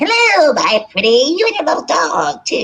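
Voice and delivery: drawn-out, slow, swooping, high wicked-witch voice. Retelling how her mom played the witch at her daughter's birthday party, Wizard of Oz witch voice. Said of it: "I'll get my mom to be the witch".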